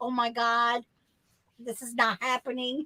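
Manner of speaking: frantic, near-tears, almost crying panic. Retelling a tense moment while pulling into a parking lot: retelling own past panic, near tears. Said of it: "I was, like, almost in tears".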